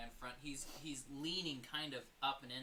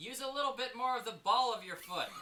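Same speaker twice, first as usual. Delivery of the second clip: very loud, high-pitched shout; 8 semitones higher, 9 dB louder than usual. In a game, voicing a man who shouts over to a player's character. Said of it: "he shouts over".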